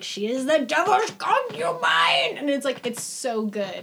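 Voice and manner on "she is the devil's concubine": weird, fired-up, high, loud, swooping rising yell. Retelling a film scene, imitating Anthony Hopkins' weird yell. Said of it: "he does this weird yell where he's like".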